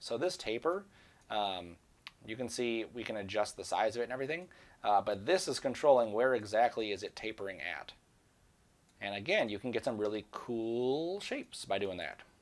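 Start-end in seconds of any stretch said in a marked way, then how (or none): 10.3-11.2 leaning stress on the word cool. Showing how a taper control changes shapes, stressing the word cool. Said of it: "how I emphasize the word cool there".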